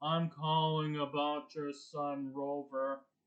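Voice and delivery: low, flat, dead-level monotone drone. Describing a cast, doing the economics teacher as a Ben Stein monotone impression. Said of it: "Mister Monotone voice. ... that's my Ben Stein impersonation".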